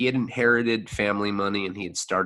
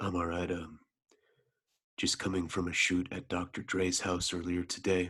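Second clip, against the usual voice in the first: put-on deadpan, soft, flat, level monotone; 2 semitones lower, 8 dB quieter than usual. Imitating a cool person's reply to small talk, in a flat monotone. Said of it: "but like monotone".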